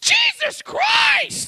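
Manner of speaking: very high, alarmed, startled cry, acted out. Comedian retells a woman in the audience yelling out before the first joke: retelling an alarmed yell. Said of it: "just yells out".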